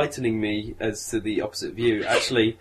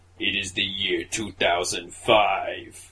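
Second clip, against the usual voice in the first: big movie-title voice, much lower; 4 semitones lower than usual. Describing a film's opening titles, the speaker does them in a big voice. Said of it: "Big voice says".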